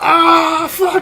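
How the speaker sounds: very high, loud, panicked shriek.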